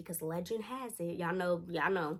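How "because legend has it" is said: hushed, spooky campfire storyteller delivery. Retelling how a friend told an urban legend: imitating campfire-story telling. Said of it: "saying it like it's, like, a campfire story".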